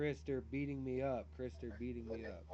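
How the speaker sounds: ordinary talk, nothing marked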